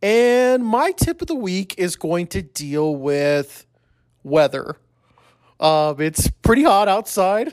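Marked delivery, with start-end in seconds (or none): 5.6-7.5 speech broken up by giggling laughter. Hosting his own show and presenting his weekly tip, giggling while talking. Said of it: "I got the giggles now".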